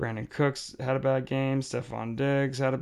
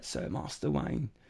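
put-on English accent, quieter; 6 dB quieter than usual. Trying to recall Alfred from Batman, then imitating him: Alfred from Batman voice. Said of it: "he always talks like that".

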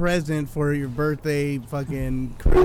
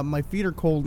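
usual speaking voice

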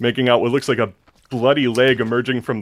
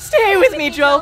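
eerie put-on woman's voice, higher; 3 dB louder than usual. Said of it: "something's wearing her voice box and pretending".

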